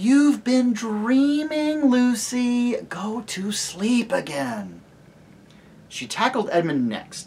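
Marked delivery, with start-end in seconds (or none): 0.0-4.8 very slow, high, irritating grown-up voice. Narrator reads Susan, woken by Lucy, answering her; annoying grown-up voice. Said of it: "say in her most annoying grown-up voice".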